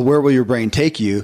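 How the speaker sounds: usual speaking voice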